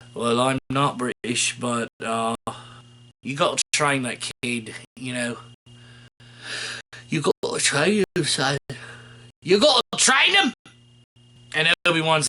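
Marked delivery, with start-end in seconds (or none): 0.2-10.6 low-voiced, insistent, pressing plea. Retelling the scene where the dying master speaks: Liam Neeson impression. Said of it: "Liam Neeson's like".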